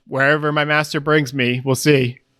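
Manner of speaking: normal talking voice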